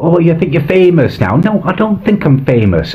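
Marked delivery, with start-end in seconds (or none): 0.0-1.4 mocking, teasing, taunting tone. Retelling how an ex taunted over a found web page: imitating Gareth mocking. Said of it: "he is mocking me".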